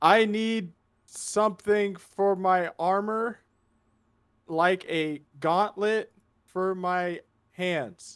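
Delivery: high put-on voice. A character clears her throat and calls out: shouting in Balmore's voice. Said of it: "in Balmore's voice go like as loud as she can".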